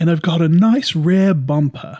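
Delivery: put-on English accent. Describing Rose looking at herself in the mirror, in Rose's English accent. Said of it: "that did sound uh, English".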